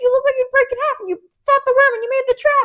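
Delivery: very high, loud, eager excited gushing. Speaker acts out an excited man's words to a woman, imitating excited gushing. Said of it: "And he's so excited".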